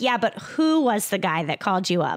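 plain

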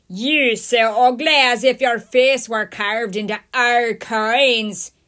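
very loud, rough, gruff bellow with words stretched. A storyteller reads a voice shouting from the courtyard entrance, a gruff shout. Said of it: "shouted a gruff voice".

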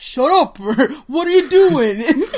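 put-on perfect New York accent, very loud and high. Retelling a scene where one man breaks from Spanish, imitating a New York accent. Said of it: "a perfect New York accent".

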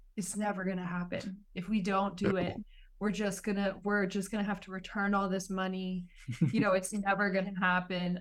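ordinary talk

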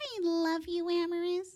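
very slow, high, little cartoon mouse voice. Showing how they play with her Minnie Mouse, the speaker does the Minnie Mouse voice. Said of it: "master the Minnie Mouse voice".

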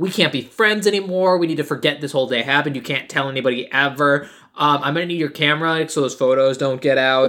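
nasty, jerky, mean, dismissive tone. Retelling a movie scene where a character dumps a girl: dickish, mean way. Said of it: "He says this in the most dickish way".

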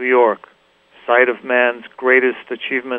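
ordinary talk, nothing marked

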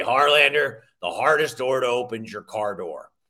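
really deep, low voice. Recounting advice from an early mentor, imitating Rich Stalder's deep voice. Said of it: "he had a really deep voice like this".

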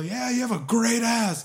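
mock very high, drawn-out, shouted heckling yell. Retelling what they yelled at a player from the stands: retelling own yell. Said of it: "I just yell".

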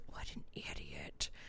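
low, hushed, insulting whisper.

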